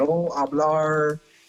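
bad put-on American accent. Retelling pretending not to know Spanish, the speaker answers: bad American accent. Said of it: "I was putting a bad American accent on it".

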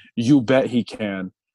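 ordinary talk

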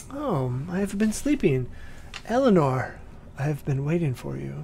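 soft, quiet voice. Storyteller voicing a voice from a coffin greeting eleanor, voice from a coffin. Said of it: "you hear a voice coming out of that coffin that says".

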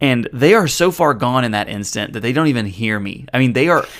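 ordinary talk

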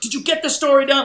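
put-on, high, shrill, loud screaming. Retelling a fake argument staged for people walking in: imitating someone screaming. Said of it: "we just started screaming at each other".

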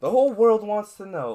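high, loud, booming mock grand announcer voice.

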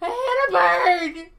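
very loud, high-pitched crying sob-talk. Retelling being pulled over by a cop: imitating own sobbing.

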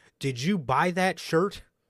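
put-on yelling, high-pitched. Telling a story of one man suddenly yelling at another: retelling a yell. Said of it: "Damian just starts yelling at him".

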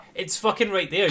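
frustrated cry. Retelling watching a replay of someone's game: retelling own screaming at screen. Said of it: "screaming at the".

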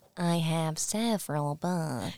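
odd, soft, dragged-out, really slow delivery. Retelling a story about a man under a gray spell, imitating him: really slow and weird. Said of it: "he talks really slow and weird".

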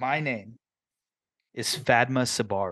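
smooth silky voice. Voicing a campaign character introducing themselves, silky Fadma Sabari voice. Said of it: "they say in a very silky tone".

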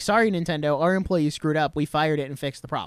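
ordinary talk

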